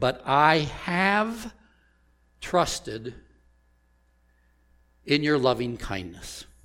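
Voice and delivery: heavy stress on the word have.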